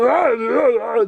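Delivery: odd character voice, high, drawn-out ah sounds. Showing how a comedian's stand-up voice sounded: imitating Bobcat Goldthwait's voice. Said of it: "the voice he did".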